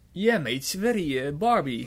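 loud, high Australian accent. Saying the line when asked to do it in australian: australian accent. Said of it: "zeg het eens op zijn Australisch".

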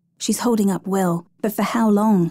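usual speaking voice

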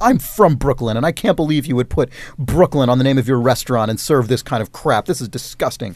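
ordinary talk

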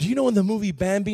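mock-whispered speech. Retelling a question a lady asked, imitating a whisper. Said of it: "whispered and says".

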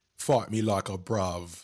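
put-on British accent, brave said as brav. Quoting a saying the speaker attributes to Brits, in a mock British accent. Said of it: "Like the Brits always say".

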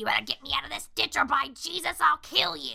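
rough, rasping, scratchy, gravelly, creaky voice. Speaker quoting a Bible thumper character grabbing a child, scratchy voice. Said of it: "in this, like, scratchy voice".

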